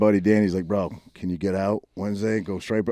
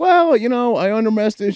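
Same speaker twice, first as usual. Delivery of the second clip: very high, loud put-on British accent; 8 dB louder than usual. Retelling what a fighter said in an interview: imitating a British fighter's speech. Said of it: "Wasn't she talking like this?".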